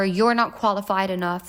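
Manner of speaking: normal talking voice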